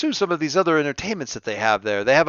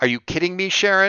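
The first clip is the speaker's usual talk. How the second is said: hushed, disbelieving, incredulous half-whispered mutter; 3 semitones higher than usual. Describing a reaction overheard after someone drops a lunch tray, quiet incredulous mutter. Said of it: "you hear very quietly in that like".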